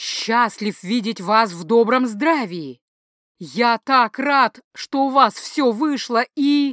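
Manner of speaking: strained forced-smile tone, nervous, panic underneath. An old man greets a mage whose face is unfriendly, with a forced smile. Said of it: "С усилием растягивая губы в улыбке".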